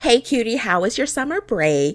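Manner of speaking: put-on young girl voice. Playing a game and reading the blonde girl's dialogue aloud, in the blonde girl's voice. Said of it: "Let me see if I can maintain this voice".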